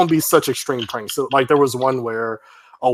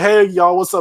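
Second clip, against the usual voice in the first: mock over-the-top hyped vlogger voice, higher; 6 semitones higher, 4 dB louder than usual. Imitating a prank video host opening his video: over-the-top prankster intro. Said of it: "They'd be over the top".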